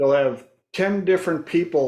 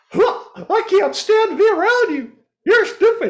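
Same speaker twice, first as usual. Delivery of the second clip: cartoon mouse voice, much higher, louder; 6 dB louder than usual. Acting out someone saying the line in Mickey Mouse's voice. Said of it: "Say it in Mickey Mouse's voice".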